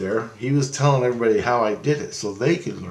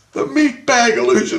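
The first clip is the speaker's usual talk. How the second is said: high-pitched, loud yelling; 13 semitones higher, 6 dB louder than usual. Speaker acting out a man screaming at them, imitating someone screaming. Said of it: "He's screaming at me".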